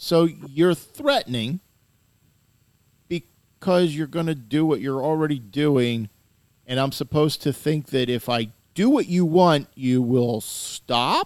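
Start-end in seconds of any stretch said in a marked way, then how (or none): 9.8-11.3 rising, question-like pitch lift on "stop". Doubting that someone will stop their threats: rising pitch on 'stop'. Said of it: "notice my voice went up".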